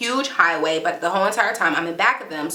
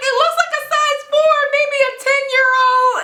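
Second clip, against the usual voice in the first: high, loud panicked cry. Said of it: "I'm like".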